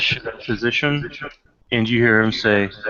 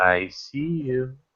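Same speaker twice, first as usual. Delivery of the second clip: tiny, small, quiet little voice; 6 dB quieter than usual. The game master voices something the players hear, in a little voice. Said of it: "you do hear a little voice say".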